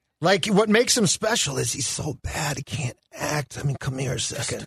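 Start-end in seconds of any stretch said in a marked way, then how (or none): 3.8-4.7 smug, cocky, self-assured hushed whisper with swagger. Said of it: "he's gonna whisper in a cocky fashion".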